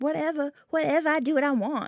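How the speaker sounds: high cartoon voice. Imagining what you would say to the judge in court, Cartman voice. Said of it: "in my Cartman voice".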